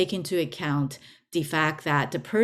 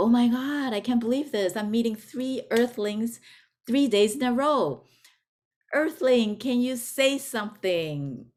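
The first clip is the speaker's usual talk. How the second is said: put-on high, thrilled, gushing alien voice; 6 semitones higher than usual. Telling a joke, voicing the extraterrestrial meeting a third earthling: excited alien. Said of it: "the E T is so excited and go".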